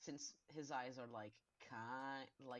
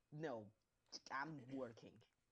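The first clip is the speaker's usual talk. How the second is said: hissed out with a dismissive tone. Playing Slinky, who hisses at the others: hissing as Slinky. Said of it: "Slinky will hiss at them and go like".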